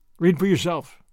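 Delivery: ordinary delivery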